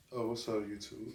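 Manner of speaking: voice dropped very low. Greeting youtube while filming, voice dropped very low. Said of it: "made your voice go down a few octaves. / I had to burp".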